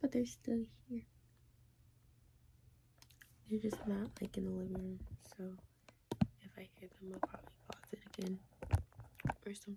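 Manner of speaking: speaking really quietly. Recording in a suite with people nearby, speaking really quietly. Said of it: "Now my voice is really quiet".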